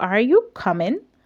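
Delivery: pitch rising at the end of "coming". Explaining question intonation with an example: pitch rises on coming. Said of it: "your voice rises".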